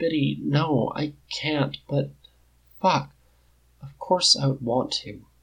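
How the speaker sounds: sounding broken, voice breaking. A narrator reads Jack answering Biddy, in a broken voice. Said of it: "sounding broken".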